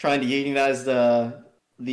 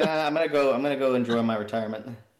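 ordinary talk

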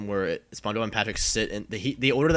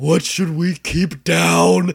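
very loud, rough, high-pitched, dragged-out yell; 8 semitones higher, 10 dB louder than usual. Retelling a SpongeBob scene where Patrick yells a question, retelling Patrick's shout. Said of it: "And Patrick just shouts".

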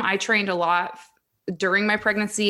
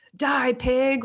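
jeering, taunting tone, held back; 5 semitones higher than usual. Retelling what people on the street yelled at a police officer: retelling someone yelling. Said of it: "people would be yelling at me".

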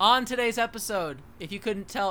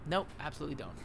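ordinary delivery

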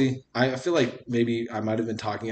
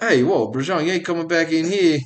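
put-on loud adult man's voice with New York accent; 7 semitones higher, 8 dB louder than usual. Imitating the other speaker's mom, in a grown new york man voice. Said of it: "Sounds like a grown New York man".

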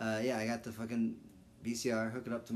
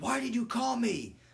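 very high, loud, shouted yell; 13 semitones higher, 6 dB louder than usual. Retelling a prank phone call, imitating someone yelling. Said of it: "yelling at him".

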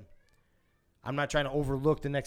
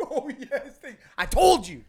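high, loud, smug gloat. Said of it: "I'm like".

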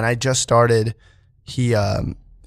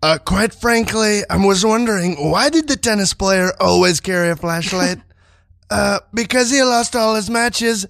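put-on blustery voice, pitched higher; 10 semitones higher than usual. Telling a tennis joke as a Donald Trump impression. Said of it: "Donald Trump here for you".

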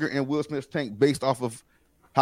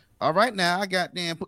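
put-on old woman character voice, higher pitch; 5 semitones higher than usual. Imitating a movie character's line: Madea voice. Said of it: "he wasn't doing Madea".

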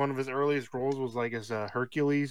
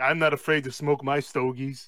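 put-on Austrian accent voice. Retelling a video of him smoking a cigar: imitating Arnold Schwarzenegger. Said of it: "that video of him".

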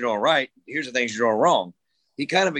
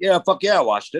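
mock angry, higher-pitched voice; 6 semitones higher, 3 dB louder than usual. Retelling his dad's reply after watching him, imitating his dad being mad. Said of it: "Why are you all mad?".

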